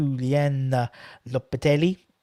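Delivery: said with an Italian accent. At half time, name the Sevilla manager in an Italian accent without knowing why. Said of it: "I don't know why I say it with an Italian accent".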